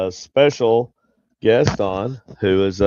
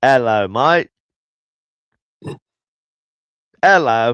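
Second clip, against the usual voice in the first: put-on, would-be Australian accent attempt; 2 semitones higher, 3 dB louder than usual. Trying an accent the other person hears as Irish: attempted Australian accent. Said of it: "It was supposed to be Australian".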